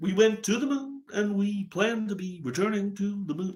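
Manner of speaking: botched, high-pitched cartoonish voice. Doing quick impressions, a failed Barack Obama impression. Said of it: "I sound like fucking some Simpsons character".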